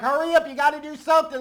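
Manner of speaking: screaming, yelling commentator-style broadcast voice. Retelling the commentators' call at the game's end: imitating Nantz and Romo screaming. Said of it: "Nance and Romo on commentary screaming like".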